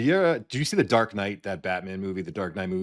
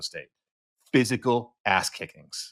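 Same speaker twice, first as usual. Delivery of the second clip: ordinary talk, nothing marked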